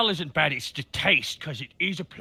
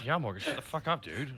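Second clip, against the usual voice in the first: soft, quiet under-the-breath mutter; 2 semitones lower, 7 dB quieter than usual. Players in a role-playing scene respond to another character, muttered under breath. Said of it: "We're just kind of under his breath".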